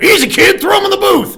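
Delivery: very high, shrill, loud man's voice. Retelling how a kid got thrown into the recording booth: impression of a man. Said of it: "It's my best impression of him".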